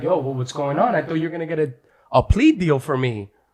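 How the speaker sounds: fast, mock alarmed, bewildered, panicked voice. Retelling what they said to their lawyer in court: retelling own panicked words. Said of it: "I'm panicking".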